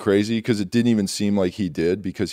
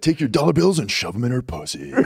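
club DJ MC announcer voice; 4 semitones higher than usual. Asked by the other speaker to do the dj voice, strip club dj voice. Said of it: "Can you do the DJ voice?".

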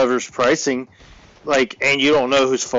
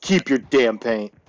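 put-on angry, pissed-off voice. Retelling an argument over paint, imitating someone pissed off. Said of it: "So he got all pissed off".

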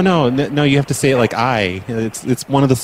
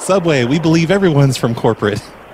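usual speaking voice

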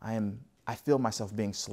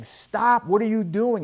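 very high, loud, urgent yell; 12 semitones higher, 9 dB louder than usual. Retelling how he ran at the thugs beating a man: imitating someone yelling. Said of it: "he's yelling at these thugs".

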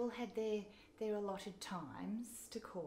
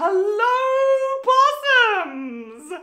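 shrill, very loud, high-pitched, with hello stretched out; 14 semitones higher, 24 dB louder than usual. Putting on Dame Edna glasses and greeting everyone: Dame Edna voice. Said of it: "my Dame Edna glasses, and the second I put those".

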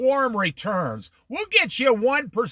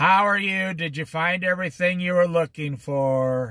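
put-on indifferent, half-hearted voice, much lower; 4 semitones lower than usual. Speaker giving lukewarm examples acts out a cashier, imitating a lukewarm cashier. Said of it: "I'll tell you who's lukewarm today".

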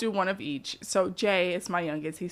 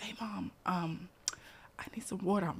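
quieter, put-on whispering child voice; 12 dB quieter than usual. Retelling a child's bedtime request for water: imitating a child whispering. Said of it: "So he whispers".

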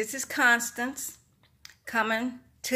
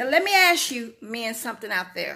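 plain

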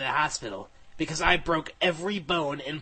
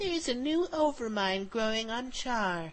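insect-like alien queen voice, bug-like, pitched up; 7 semitones higher, 4 dB quieter than usual. Telling a story, the narrator repeats Kerrigan's report, bug-like Kerrigan voice. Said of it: "She's the Queen of Blades, ... She said in a bug-like voice".

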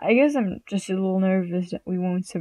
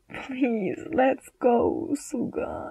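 very slow, drawn-out, whiny pleading tone; 4 semitones higher than usual. A character begs a friend to leave with him, whining. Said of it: "he whined".

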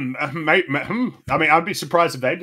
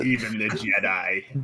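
low, soft, slightly evil, sly and sinister voice; 5 semitones lower, 5 dB quieter than usual. Showing they can say the line in a bit of an evil voice. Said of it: "I can even say it in a bit of an evil voice".

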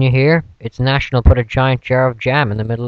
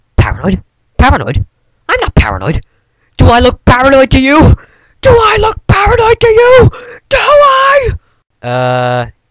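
hysterical, very high, shrill shouting, rising; 13 semitones higher, 6 dB louder than usual. In a sketch, an officer called paranoid denies it: frantic paranoid denial.

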